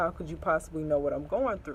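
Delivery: normal talking voice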